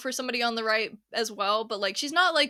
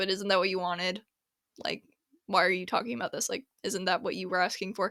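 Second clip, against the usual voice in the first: mock condescending tone, lower pitch; 4 semitones lower, 4 dB quieter than usual. Retelling a question a woman asked about hate comments: imitating a condescending question. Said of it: "the way she said it was kind of a little bit condescending".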